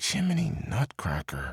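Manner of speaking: muttered quietly under her breath. A girl loses her slipper in the mud, muttered. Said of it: "she muttered".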